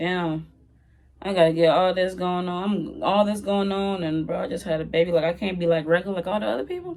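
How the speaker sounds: ordinary talk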